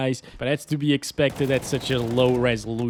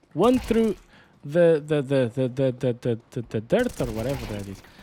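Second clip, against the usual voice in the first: stuttering, tripping over repeated words, faster. Commentating own gameplay after a frustrating death, stuttering. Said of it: "I'm stuttering".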